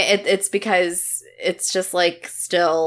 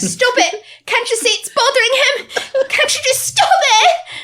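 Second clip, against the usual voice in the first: shrill, very high, loud raised voice; 5 dB louder than usual. Imitating a movie character pleading for them to stop. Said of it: "she's like".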